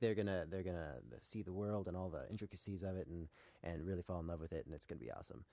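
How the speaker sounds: ordinary delivery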